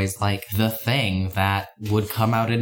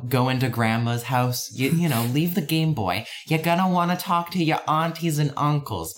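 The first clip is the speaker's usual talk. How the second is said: higher-pitched acted Boston accent; 5 semitones higher than usual. Retelling a mother's instructions before going into grandma's house, in a Boston accent. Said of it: "I gave my mother a Boston accent".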